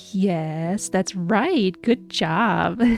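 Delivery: put-on condescending tone. Retelling what he said after the noisy game, mock-condescending. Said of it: "the most condescending way, he says".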